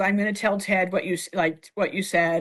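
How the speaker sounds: plain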